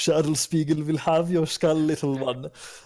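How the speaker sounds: laughing taunt. Taunting a goblin in character before attacking: laughing while taunting in character. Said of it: "laughing like".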